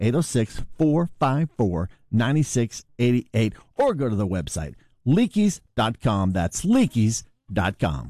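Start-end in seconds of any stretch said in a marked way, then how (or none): 0.0-3.5 deliberately slower, slowed-down delivery. Ad announcer repeating the phone number so listeners get it, saying it slower. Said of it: "Let's say it a little bit slower".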